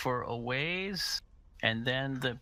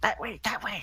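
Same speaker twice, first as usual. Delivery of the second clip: tiny, squeaky little voice, very high; 9 semitones higher, 3 dB louder than usual. Narrating to the players, speaker voices what they hear in a little squeaky voice. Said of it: "you heard a little squeaky voice say".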